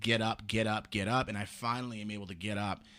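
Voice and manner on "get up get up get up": ordinary delivery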